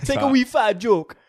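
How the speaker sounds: very high, loud, fake patois accent. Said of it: "do [name] doing a, doing a Rasta-".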